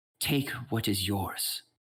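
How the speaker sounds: highly feminine echoing voice. Game master voices a voice echoing through the forest to Aurora: highly feminine echoing voice. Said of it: "you hear a highly feminine voice".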